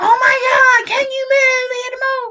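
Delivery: frantic, shrill screaming, very high pitched. Getting on a bus, imitating a woman screaming at the bus driver.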